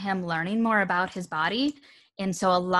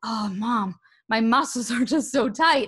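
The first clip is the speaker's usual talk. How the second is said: mock deep sigh, slower; 4 semitones higher than usual. Mother retells how her son calms himself, imitating her son's deep-breath sigh. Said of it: "takes a deep breath and he's like".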